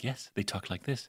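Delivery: low, hushed radio talk voice. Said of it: "the normal show was like".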